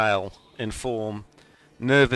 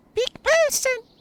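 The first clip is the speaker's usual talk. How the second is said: very high, tiny little creature voice. Narrator voices a creature hovering at a player's nose, in a very high-pitched voice. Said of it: "in a very high-pitched voice".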